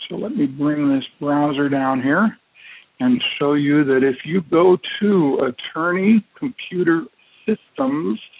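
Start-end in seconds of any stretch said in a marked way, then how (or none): 7.5-8.2 final s of systems made to stand out. Webinar host directing viewers to the website, stressing the S in Systems. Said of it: "notice my emphasis on the last S".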